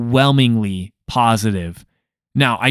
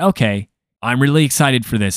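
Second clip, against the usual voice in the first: ordinary talk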